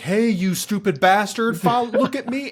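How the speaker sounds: very high, loud, taunting shout. Retelling a movie scene where a man taunts a monster: imitating someone yelling. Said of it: "he yells".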